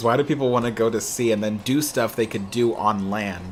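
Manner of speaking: ordinary talk, nothing marked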